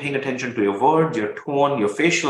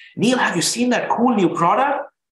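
high, loud excited voice. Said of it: "you can hear the excitement in my voice".

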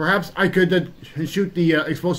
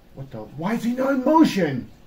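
surprised, taken aback, pitched much higher; 5 semitones higher than usual. Danno sees the motionless Fake Bonestyx on the TV monitor, surprised.

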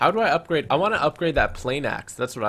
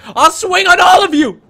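very loud, very high, shrill yell; 15 dB louder than usual. Holding a fire weapon in a game, yelling into the darkness. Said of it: "I'm just yelling into the darkness".

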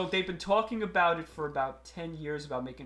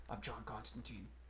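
flat monotone impression, much lower and quieter; 6 semitones lower, 17 dB quieter than usual. Mocking an actor's flat delivery in every movie: imitating an actor's monotone. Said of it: "he's had that monotone".

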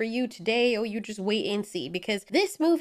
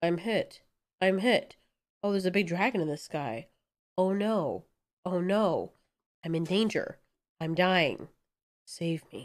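mock flat, emotionless delivery, lower and quieter; 4 semitones lower, 4 dB quieter than usual. Mocking a character's reactions in the intro, imitating a flat emotionless delivery. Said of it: "a little bit more emotion than just frickin'".

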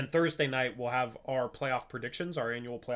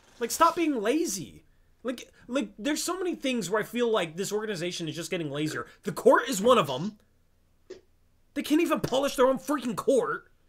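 very high, loud, annoyed and mad rant; 9 semitones higher, 6 dB louder than usual. Complaining to a co-host about a team's laziness, getting mad. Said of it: "Oh, God, I'm getting mad".

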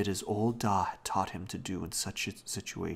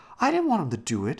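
very loud, shrill, high-pitched voice; 8 semitones higher, 9 dB louder than usual. Robbie answers Janet's scolding over his poor old Da, protesting. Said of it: "Robbie protested".

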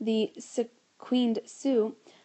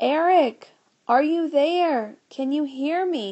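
loud, high yelling shout; 5 semitones higher, 5 dB louder than usual. George, leaning through the door into outer space, calls out to eric, yelling. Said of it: "he yelled".

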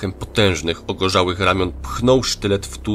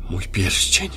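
excited, thrilled stage half-whisper. A man clutches the ring with both hands, an excited half-whisper. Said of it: "szeptał podniecony".

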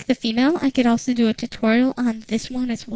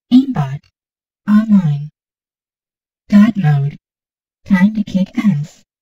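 female android character voice, louder; 3 semitones lower, 6 dB louder than usual. Demonstrating voice presets, the speaker shows off a female android voice. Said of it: "The female android".

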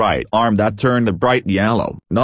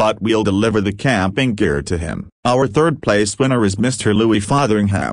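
ordinary delivery

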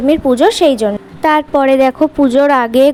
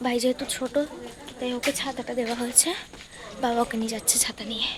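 very soft, hushed talk. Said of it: "একদম আস্তে আস্তে কথা বলছি আমি".

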